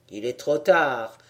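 low, snickering, sneering delivery. Nasia, pulling the narrator outside, speaks to him with a sneering snicker. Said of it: "dit-il en ricanant".

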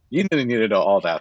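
normal talking voice

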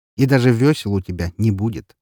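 ordinary delivery, nothing marked

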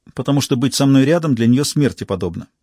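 usual speaking voice

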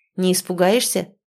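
ordinary delivery

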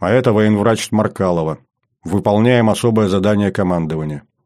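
ordinary delivery

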